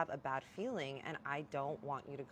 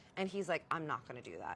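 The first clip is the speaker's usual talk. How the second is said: ordinary talk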